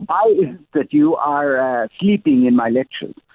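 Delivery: put-on German accent. Retelling what a law professor said to a student: German accent. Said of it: "he had a German accent, by the way".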